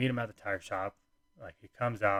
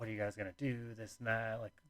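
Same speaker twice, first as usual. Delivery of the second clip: mock super-serious tone, much quieter; 11 dB quieter than usual. Speaker retelling her mom's questions to the couple, mock super-serious mother-in-law. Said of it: "being super serious".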